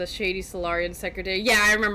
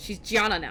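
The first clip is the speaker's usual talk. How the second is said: plain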